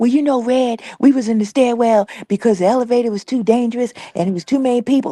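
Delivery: put-on whisper. Mocking how Jacob always talks: imitating Jacob whispering. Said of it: "He's whispering all the time".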